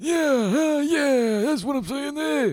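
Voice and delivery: stammered, halting, slow, drawn out, loud, very high. Imitating the politician saying yeah in a halting way. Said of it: "Sounds like you have a stroke".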